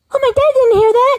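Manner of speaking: put-on high, loud sneaky child voice.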